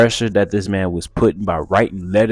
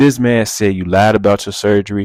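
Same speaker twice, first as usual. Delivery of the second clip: ordinary talk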